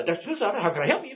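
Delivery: rushed, rattled-off, high-pitched delivery. Showing how a busy practice answers a patient's call, talking real fast. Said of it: "you're talking real fast".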